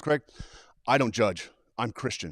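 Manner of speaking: mock affronted, offended woman's voice. Retelling what an offended woman in the class said: imitating an offended woman. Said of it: "She was very offended".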